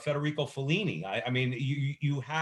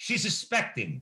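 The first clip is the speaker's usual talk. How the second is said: put-on Cuban accent, pitched higher; 5 semitones higher than usual. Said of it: "in his Cuban accent".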